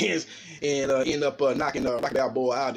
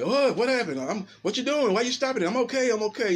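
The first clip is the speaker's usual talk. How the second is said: feigned, high, bewildered, innocent-sounding confusion; 8 semitones higher than usual. Describing a stopped fight, the speaker acts out the boxer, mock-confused. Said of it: "went into uh, camouflage mode and like".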